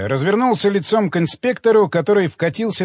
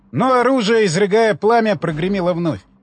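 plain

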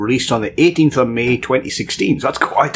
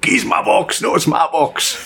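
mock Glasgow bickering, much higher pitched; 5 semitones higher than usual. Joking about Christmas morning with two brothers in Glasgow, imitating Glasgow brothers fighting. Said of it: "Christmas morning when there's two brothers in Glasgow".

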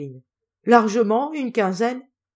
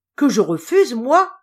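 sudden outcry in a raised, exclaiming voice; 4 semitones higher, 5 dB louder than usual. The granddaughter answers a poor exile asking to join her family; exclaim it. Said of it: "s'écria Natacha".

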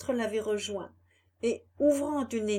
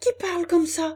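high, loud, trembling voice full of terror; 8 semitones higher, 7 dB louder than usual. Pinocchio answers a voice close by him, trembling with terror. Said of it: "dit Pinocchio en tremblant d'épouvante".

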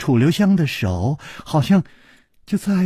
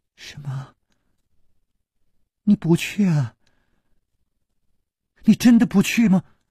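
trembling, quavering, unsteady voice; 4 semitones higher than usual. A pale woman backing away, still staring at the man, speaks in a trembling voice. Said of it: "颤声说".

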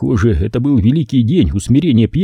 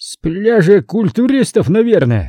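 derisive, scornful, mocking, pitched-up jeer; 8 semitones higher than usual. A man sobered by a scuffle answers the narrator's introduction, mocking. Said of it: "насмешливо произнес он".

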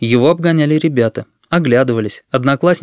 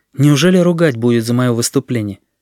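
ordinary delivery

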